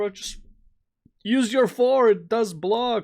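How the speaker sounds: mock shrill scream, very high. Retelling watching a match, imitating his own screaming at the screen. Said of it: "screaming at the screens".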